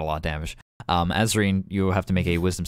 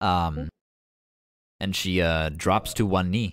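ordinary delivery

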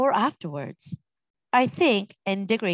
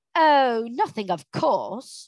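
slow, sarcastic drawl, every word meant the opposite; 2 semitones higher than usual. Narrating a story, Polly answers Diggory sarcastically. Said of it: "said Polly sarcastically".

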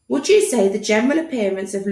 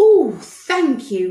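delighted, raised voice; 4 semitones higher, 5 dB louder than usual. The doctor replies to Tom, thanking him: delighted. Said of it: "his eyes dancing with delight".

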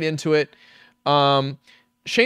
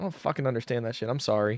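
plain

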